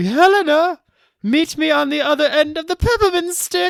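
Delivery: super weird, very high-pitched, loud voice. Imagining a line spoken to Helena: super weird high-pitched Tim Burton voice. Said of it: "Tim Burton has a super weird, high-pitched voice".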